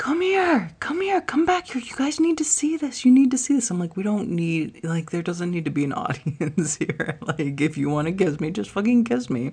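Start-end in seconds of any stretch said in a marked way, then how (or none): 0.0-3.7 acted yelling, very high and shrill. Retelling how a woman called others back, the speaker imitates her yelling out the window. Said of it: "she's yelling out my window".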